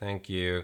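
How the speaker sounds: put-on offhand, uninterested, dismissive delivery. Retelling a woman's reply to a compliment: imitating a dismissive thank you. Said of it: "in that kind of dismissive way".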